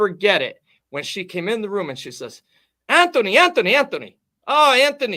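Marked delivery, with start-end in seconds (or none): 2.9-5.2 terrible, put-on Italian accent, very high and loud. Retelling a mother walking into the room calling her son, terrible Italian immigrant accent. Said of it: "in my best Italian immigrant accent".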